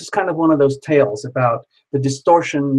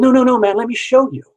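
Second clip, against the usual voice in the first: play-acted very high-pitched, defensive tone; 9 semitones higher, 4 dB louder than usual. Retelling a man's protest after being brushed off: imitating someone getting defensive. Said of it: "got defensive".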